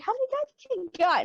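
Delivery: very high, squeaky voice pitched way up. Retelling a conversation with friends, quoting Alex, imitating Alex's squeaky voice. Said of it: "And his voice got so squeaky".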